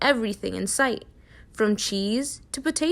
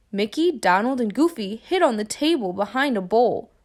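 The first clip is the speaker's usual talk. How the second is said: ordinary delivery, nothing marked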